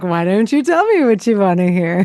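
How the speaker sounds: put-on phone announcer voice. Retelling a Seinfeld scene: Kramer doing the Moviefone voice. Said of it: "he just starts doing the voice".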